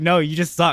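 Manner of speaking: ordinary delivery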